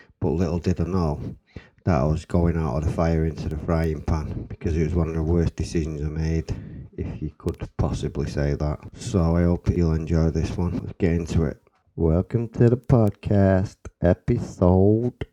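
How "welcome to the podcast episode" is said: put-on American accent, loud, slow, drawn out. Opening the podcast episode, in a put-on American accent. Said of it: "Don't know why I'm doing that American accent".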